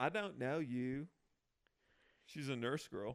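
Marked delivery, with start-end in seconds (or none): 0.0-1.1 slow, drawn-out put-on Texas drawl. Retelling what a texas girl says on a show: texas accent. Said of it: "Do that Texas accent again".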